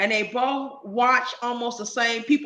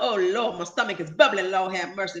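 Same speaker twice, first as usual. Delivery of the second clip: put-on elderly man's exclaiming outcry; 4 semitones lower than usual. Retelling a food video creator's reaction: imitating an old dude. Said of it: "every time he said".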